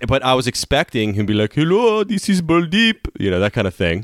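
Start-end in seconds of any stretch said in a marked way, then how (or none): 1.5-3.1 put-on Indian accent, pitched way up. Telling how he expected a guy he phoned to answer, put-on Indian accent. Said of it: "To a lot of Indian yeah".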